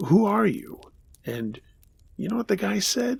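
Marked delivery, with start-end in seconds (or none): 0.1-0.8 put-on thick French accent, higher and louder. Retelling asking a man in the apartment who he was: heavy French accent. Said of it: "I asked with a heavy French".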